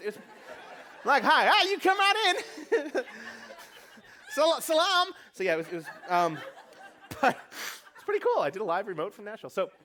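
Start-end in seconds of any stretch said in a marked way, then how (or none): 1.2-5.1 very high, slow, drawn-out put-on Southern drawl. Speaker retells being greeted on a live remote in Nashville, in a Southern accent. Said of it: "said with like a Southern accent".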